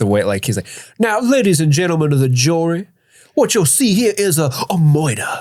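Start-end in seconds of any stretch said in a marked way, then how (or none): 1.0-5.3 put-on Southern lawyer voice, pitched higher. A podcast host imitates Trotter addressing the jury: Trotter's Southern lawyer voice. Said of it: "the classic Southern lawyer".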